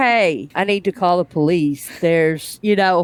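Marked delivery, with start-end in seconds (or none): 0.0-1.9 put-on bone-dry, zero-effort, completely deadpan line read. Discussing a show, one speaker mimics an actor's line, imitating a completely dry delivery. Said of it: "completely dry voice".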